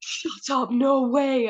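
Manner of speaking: play-acted, very slow, high, drawn-out thrilled scream. Retelling mum's reaction to the news on the phone: imitating someone screaming. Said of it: "she was, like, screaming down the phone".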